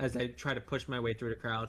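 ordinary delivery

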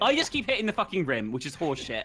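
fed-up angry tone. Complaining that the ball keeps hitting the rim: angry, frustrated. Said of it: "I'm so angry right now".

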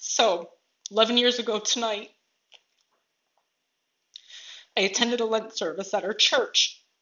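tearful, emotional speech through tears. Speaker sharing a personal story, overcome with emotion, tearful. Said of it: "This is good tears".

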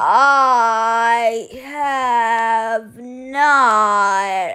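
very slow, drawn-out sloth voice.

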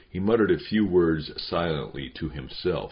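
plain

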